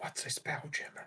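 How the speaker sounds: quiet whispering. Player quietly asks a companion on their shoulder a question: quiet whisper. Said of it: "I will quietly ask Ari".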